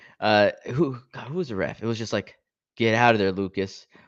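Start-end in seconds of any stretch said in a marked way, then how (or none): 2.8-3.8 put-on dull, lifeless, flat, low-energy monotone. Quoting the ref telling lucas to get out, in a mock monotone, low-energy voice. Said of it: "with like the most monotone, low energy voice".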